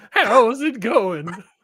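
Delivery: put-on old western man voice. Voicing Tomas the gingerbread man, greeting the others: old western man voice, Gunsmoke-style. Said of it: "it's like an old man's voice".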